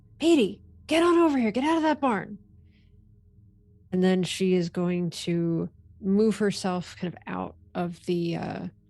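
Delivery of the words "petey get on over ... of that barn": high, carrying shouted call. Voicing a character calling a child out of a barn amid gunfire: yelling. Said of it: "she's gonna yell".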